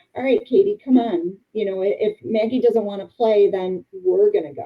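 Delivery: ordinary talk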